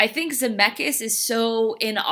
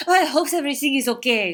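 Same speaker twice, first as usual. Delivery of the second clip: put-on French accent; 3 semitones higher than usual. Describing a movie character, speaker redoes her line in a French accent. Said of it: "She has a French accent. That was terrible. Let me do that again".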